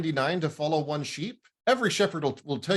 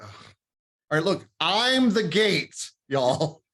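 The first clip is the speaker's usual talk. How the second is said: put-on weary, exasperated sigh, fed-up tone. Retelling a bible passage, acting out the shepherd's words: mock-exasperated. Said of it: "so much just exasperation in Jesus".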